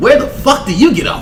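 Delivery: high, loud, mocking outraged ranting voice.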